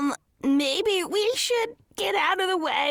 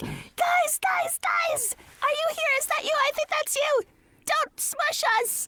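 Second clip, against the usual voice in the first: very high, shrieking, high-pitched screaming calls; 13 semitones higher than usual. Narrating a scene, voicing Gaelish shouting to the group: Gaelish screaming. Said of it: "as Gaelish is screaming like".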